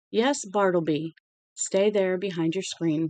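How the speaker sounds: usual speaking voice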